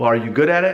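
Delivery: plain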